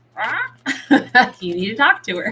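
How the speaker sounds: high, birdlike raven voice. Retelling what his raven keeps saying to him, in a raven impression. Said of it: "That's my raven impression".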